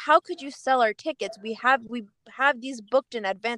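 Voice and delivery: ordinary talk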